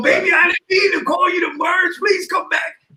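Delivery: put-on very high, tearful, sobbing pleading. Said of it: "only time you gonna hear me cry".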